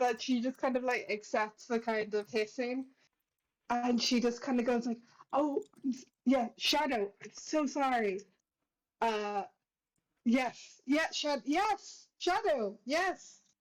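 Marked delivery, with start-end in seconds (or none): 5.3-13.3 very slow, sunny, unhurried cheerful voice. Playing Fides as she accepts the hissing, Fides in a cheerful mood. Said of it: "still in such a good mood".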